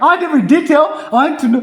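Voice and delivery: thrilled, very high-pitched, loud excited shouting. Retelling how a friend eagerly demanded every detail, imitating excited screaming. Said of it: "You are in the street screaming".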